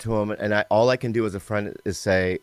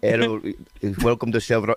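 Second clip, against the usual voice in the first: put-on East African accent; 3 semitones higher than usual. Asked for another accent, the speaker offers one: put-on East Ethiopian accent. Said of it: "East Ethiopian is my okay?".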